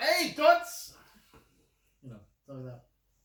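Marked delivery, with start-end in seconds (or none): 0.0-0.9 shrill, very high, very loud holler. Pretending to yell at ladies across the street: put-on yell at ladies. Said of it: "yell at those ladies across the street".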